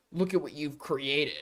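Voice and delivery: put-on voice with a mocking edge. Mocking someone's cringe bit: mocking Tectone impression. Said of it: "trying to be like".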